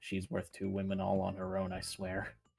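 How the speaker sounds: tone dropped down, soft, hushed, confiding. Voicing Talos leaning toward Cicada: Talos speaking in a lowered tone. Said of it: "he just kind of lowers his tone and is like".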